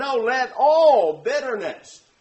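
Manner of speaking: ALL stressed and said loudly.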